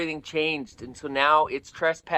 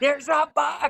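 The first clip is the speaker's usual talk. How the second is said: mock panicked voice, higher; 12 semitones higher than usual. Retelling how the truck driver called out: imitating a panicked voice. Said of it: "in a panicked voice".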